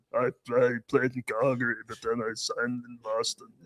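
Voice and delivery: deep giant voice. Imitating a player for the others to guess: Nikita Zadorov's giant voice. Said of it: "what's that giant voice?".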